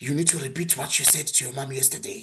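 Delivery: very deep, manly, masculine voice. Retelling a family gathering, quoting the uncle's demand: very deep, manly, masculine voice. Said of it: "my uncle says in a very deep, manly, masculine voice".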